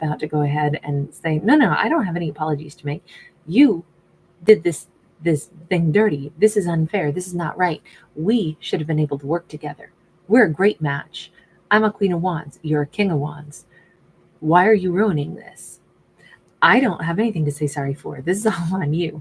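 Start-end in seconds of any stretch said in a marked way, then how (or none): 1.4-19.2 mock sassy giving-what-for tone, full of attitude. Acting out what she might say to him: sassy tone voicing her. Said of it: "my tone, my pitch was very, you know, sassy just now".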